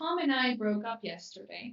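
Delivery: ordinary talk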